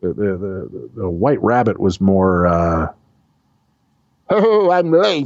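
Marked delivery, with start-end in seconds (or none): 4.3-5.3 muffled, strange voice, higher pitched. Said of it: "He had that kind of muffly, weird voice".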